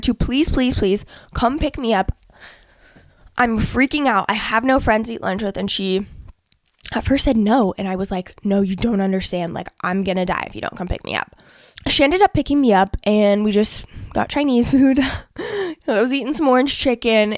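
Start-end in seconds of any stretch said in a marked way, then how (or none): 8.4-11.4 acted pleading. Recounting begging a woman to come pick them up, retelling begging her. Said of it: "like literally begging her".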